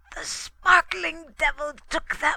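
croaking cry, very high-pitched and loud. Narrator reading Olaf Huldrickson's words aloud, in Olaf Huldrickson's croak. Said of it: "croaked Olaf Huldrickson".

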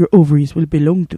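put-on low, vague, unplaceable European accent. Speaker acts out what an imagined suitor will say, in a vague European accent. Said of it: "I can't tell where you're from, European accent".

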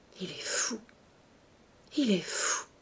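slow, cracked, broken, hushed voice. Marthe, unable to cry, repeats the words to her uncle: slow, broken voice. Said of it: "d'une voix lente et cassée".

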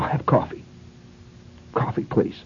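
very tense, breathy, hushed half-whisper. Telling a story, voicing a woman ordering coffee from the counter man, imitating a tense voice. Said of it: "in a very tense voice".

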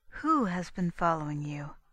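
gentle, kindly tone. Constance asks the girl who has been following her: gently. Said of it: "asked Constance gently".

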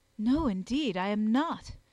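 earnest. The narrator answers a woman who asked if he is scornful: earnest. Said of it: "I answered earnestly".

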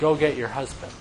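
acted kind, soft voice. Retelling what he says to the woman, retelling gentle, loving words. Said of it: "He says very gently and lovingly and kindly".

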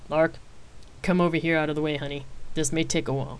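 with a chuckle. Rain's father motions lark over to watch the melee, with a chuckle. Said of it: "Rain's father replied with a chuckle".

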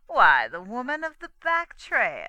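scornful, very loud, drawn-out sneering. A narrator reads the sheriff answering the girl's question, sneering. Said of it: "he sneered".

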